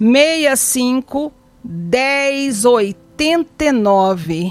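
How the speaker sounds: very slow, each item said separately.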